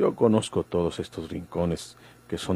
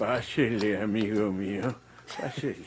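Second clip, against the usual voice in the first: put-on elderly man's voice; 3 semitones higher, 3 dB quieter than usual. Welcoming a visitor in, old man voice. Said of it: "Le sale muy bien esa voz de anciano".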